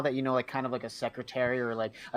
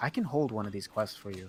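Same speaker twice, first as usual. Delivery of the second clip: sly, low, hushed murmur, acted out; 4 semitones lower, 3 dB quieter than usual. A player recounts an offer from the Adventurers Guild woman, mimicking a sly, low tone. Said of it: "she says that slyly".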